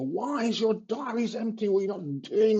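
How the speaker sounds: mock high-pitched, shrill, scolding screaming. Retelling how he shamed staff over empty diaries: imitating himself screaming. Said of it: "I'd be screaming at them".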